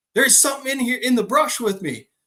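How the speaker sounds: mock hollering. Retelling calling out to a brother and his buddy in the woods: retelling a holler. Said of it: "So I'm hollering to my brother and his buddy".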